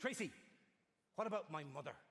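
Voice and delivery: mocking, derisive delivery. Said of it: "just taking the mickey".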